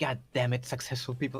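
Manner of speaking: quiet mumbling under the breath. Voicing an enemy about to be hit: muttered under breath. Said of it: "under his breath, he just said".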